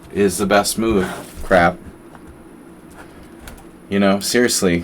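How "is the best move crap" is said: ordinary delivery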